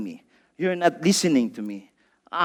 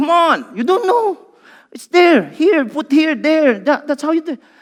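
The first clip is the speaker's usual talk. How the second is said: acted-out impatient tone, very high and raised; 10 semitones higher, 7 dB louder than usual. Retelling helping dad save files on the computer: imitating own impatient tone. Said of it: "And I would be impatient".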